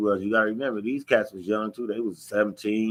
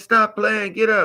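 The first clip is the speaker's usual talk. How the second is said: very high, raised yelling; 12 semitones higher, 5 dB louder than usual. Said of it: "They're yelling at me".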